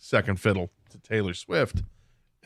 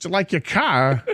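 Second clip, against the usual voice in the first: slow, drawn-out delivery with raised pitch; 8 semitones higher, 3 dB louder than usual. Recalling a commercial where everyone impersonated him: Christopher Walken impression. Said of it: "everyone kept impersonating him".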